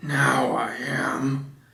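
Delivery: growly storybook bear voice. Narrator reads Winnie the Pooh's reply, in a growly Winnie the Pooh voice. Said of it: "said a growly voice".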